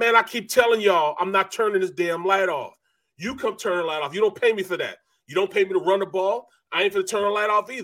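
angry, heated, furious ranting tirade. Retelling a player refusing a coach's request: imitating Charlie Garner going off. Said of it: "Went off".

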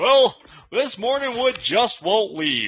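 newscaster voice. Asked to say the line again in a reporter voice: news reporter voice. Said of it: "Say it in a reporter".

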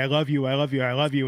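ordinary talk

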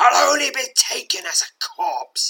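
shrill, very high-pitched, swooping hiss. Narrating an adventure, the cornered escaped prisoner speaks to you, hissing. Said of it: "he hisses".

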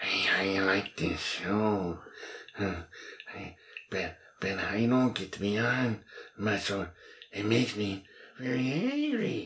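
creepy put-on character voice. Asked which voice is his favorite, he shows it: creepy Peter Lorre voice. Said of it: "my creepy Peter Lorre type voice".

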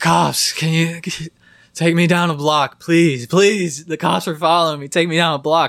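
put-on drunken slur. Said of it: "He's slurring his words".

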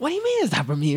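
outraged, very high, loud, fast shriek.

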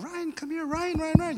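shrill, very high excited yelling. Retelling a crowd of kids calling to a child in a pram, imitating kids yelling a name. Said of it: "30 kids just yelling".

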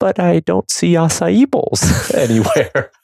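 mock very high, sweet, sugary, lilting sing-song voice. Retelling what Tyler said during a discussion at a retreat, imitating Tyler's sweet voice. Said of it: "in a very like sweet voice was like".

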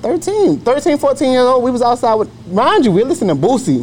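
emphatic, pitched-way-up delivery.

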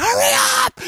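play-acted frantic scream, very high and shrill. Retelling running down the street with three crying girls: retelling a frantic yell. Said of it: "So I'm screaming".

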